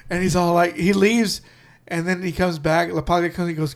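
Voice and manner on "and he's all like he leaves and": ordinary delivery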